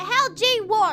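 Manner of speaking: put-on British child voice. Giving a newly introduced character a voice on the spot: british child voice. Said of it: "I only have the um the British child voice".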